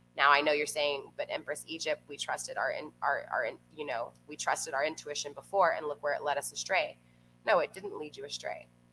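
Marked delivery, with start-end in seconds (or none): none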